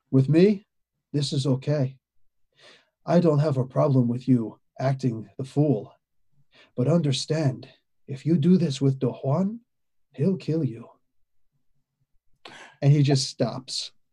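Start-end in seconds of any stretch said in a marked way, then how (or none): 0.1-10.8 cold non-player-character voice. Voicing a character who stares coldly and warns a player: NPC voice staring coldly. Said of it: "I'm trying to get the voice down right".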